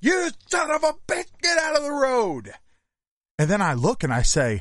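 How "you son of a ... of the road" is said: very high, shrill, all-out scream. Retelling screaming at a driverless car on the road, retelling a scream. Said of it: "I start screaming".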